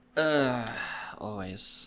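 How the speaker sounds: downcast, mopey, glum and sad voice. Answering whether ready for a sports minute, sounding sad. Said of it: "You just sound so sad".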